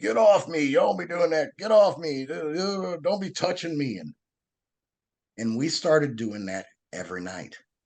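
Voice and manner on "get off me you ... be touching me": put-on protesting scream, very high pitched. Retelling how he reacted to being grabbed and hugged, imitating someone screaming. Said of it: "he's screaming".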